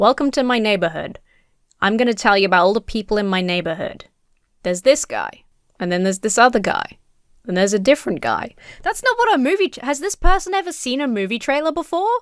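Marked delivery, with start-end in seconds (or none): 0.0-8.5 play-acted, dull, boring voiceover narration. Mocking how a movie trailer's main character introduces the neighborhood: mocking a boring trailer main character. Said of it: "for a movie trailer, how boring is it to have the main character just be like".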